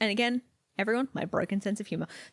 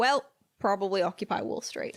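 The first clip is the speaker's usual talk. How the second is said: ordinary delivery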